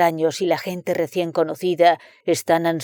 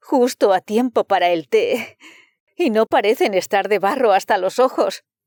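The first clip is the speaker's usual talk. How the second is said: suddenly excited, eager, higher pitch; 3 semitones higher than usual. A hostess suddenly perks up and calls out to her visitor, suddenly excited. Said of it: "dijo de pronto la señora [name]. / Era consciente de que su anfitriona le prestaba solo un fragmento de su atención, / Siguió hablando alegremente sobre la cacería y la escasez de pájaros y el prospec".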